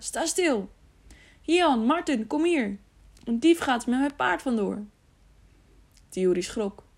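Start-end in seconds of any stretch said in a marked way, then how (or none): 0.0-4.8 calling out loudly. A man with a lantern shouts after someone riding off on his horse, shouting after someone. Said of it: "riep hij na".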